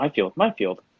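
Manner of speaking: put-on child voice echoing the words back. Voicing child figures echoing the guardian's words: voicing child figures. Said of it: "the child repeat".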